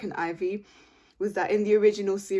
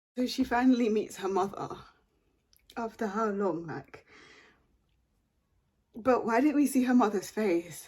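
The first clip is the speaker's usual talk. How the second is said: teary, on the verge of tears; 2 semitones higher than usual. Reacting for viewers to an emotional game episode, tearful. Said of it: "I promised myself I wasn't gonna tear up".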